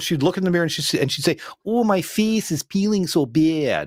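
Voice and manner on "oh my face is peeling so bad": put-on tight-mouthed Midwest accent, higher, much slower. Acting out a high school girl talking to the mirror, Midwest accent, tightened mouth. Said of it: "another big Midwest thing".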